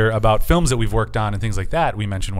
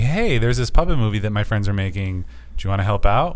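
ordinary talk, nothing marked

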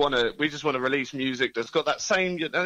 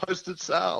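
put-on radio DJ announcer voice, much higher; 4 semitones higher, 3 dB quieter than usual. Announcing the band's name during an interview, in a DJ-y voice. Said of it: "said in such a really great DJ-y voice".

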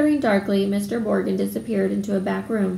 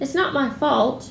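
pitched-up, higher voice; 5 semitones higher than usual. Draco replies to Mr. Malfoy's remark, retorting. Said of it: "retorted Draco".

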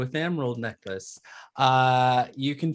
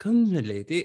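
put-on rough, sudden French accent, pitched up; 7 semitones higher, 4 dB louder than usual. Narrating a story, voicing the maid speaking to her lady, in attempted French accent. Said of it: "in a sudden French accent says".

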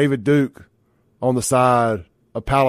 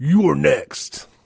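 rough, raspy, creaky put-on voice; 3 semitones higher than usual. Repeating the previous line, done in a Goldberg voice. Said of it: "In my Goldberg voice".

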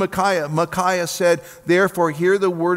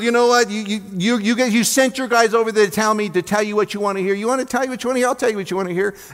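mock sarcastic, tongue-in-cheek, insincere needling tone; 4 semitones higher than usual. Acting out the prophet mocking the king: imitating Micaiah mocking the king. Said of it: "said it in a way that they knew he wasn't being candid".

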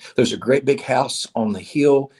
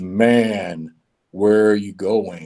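deep, very slow commanding voice, drawing out "man". Telling a story, voicing God calling from above: deep voice of God. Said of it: "a deep voice that says".

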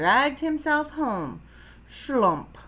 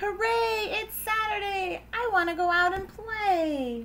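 very high, slow, stretched-out yell; 10 semitones higher, 4 dB quieter than usual. Narrator voices a frog waking up on Saturday, yelling. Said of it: "Froggy woke up and yelled".

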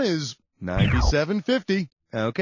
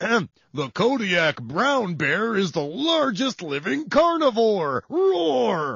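speaking in a bear voice; 2 semitones higher than usual. A quiz presenter delivers the next fact in a bear voice. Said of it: "here's my bear voice".

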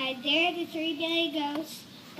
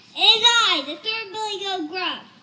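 very loud, big booming voice; 4 semitones higher, 8 dB louder than usual. Reading the story aloud, the third Billy Goat Gruff answers in a very loud voice. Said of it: "in his very loud voice".

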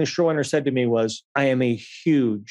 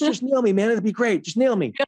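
put-on high, eager, game-for-anything young bro voice; 9 semitones higher than usual. Retelling a scene rehearsal, doing a Jeremy impression. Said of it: "That's a good Jeremy impression".

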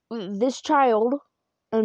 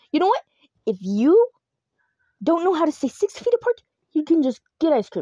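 furious, very angry, pitched-up scolding tone; 5 semitones higher than usual. Retelling what a woman said after turning around, imitating a very angry voice. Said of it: "In a very angry voice".

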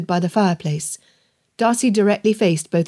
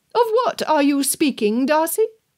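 high, imperious, commanding, pitched-up voice; 8 semitones higher than usual. Narrator reads Aunt Catherine demanding her share of the conversation: commanding. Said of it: "[name] directed, leaving no room for dissent".

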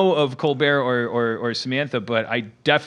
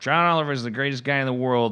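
usual speaking voice

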